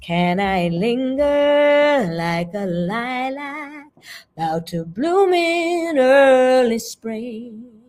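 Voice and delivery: very slow, lingering, sitting on the rhythm. Speaker demonstrating different phrasings of one sentence, lingering with the rhythm. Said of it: "That time I chose to sit with rhythm".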